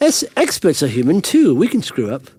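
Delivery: play-acted sneering, condescending talk-down tone. Quoting the other speaker's own words back to them, in a mock-condescending way. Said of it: "the way you say that makes it sound condescending".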